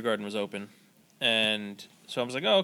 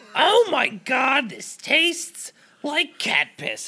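shrill, very high, very slow, drawn-out swooping scream; 6 dB louder than usual. Retelling a woman's reaction to tasting a beer, imitating her screaming. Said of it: "And she's just screaming it".

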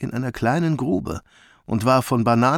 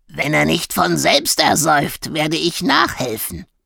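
croaking, crow-like voice; 4 semitones higher, 4 dB louder than usual. Gnag the crow joins the animals mocking him, croaking. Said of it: "krächzte".

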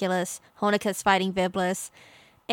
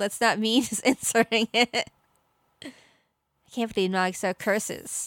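ordinary talk, nothing marked

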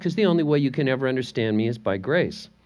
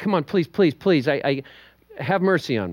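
put-on begging, pleading tone, slower. Retelling a parable, voicing the debtor pleading with the king, acting out begging. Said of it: "He begged".

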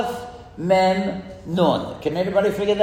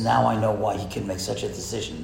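low, soft whisper. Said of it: "he whispers to the".

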